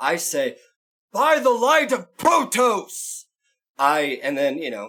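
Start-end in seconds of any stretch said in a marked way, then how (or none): 1.1-3.3 very high, ringing, yelled battle cry. Igniting a battle axe with a catchphrase, yelling a battle cry. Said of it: "I yell out my".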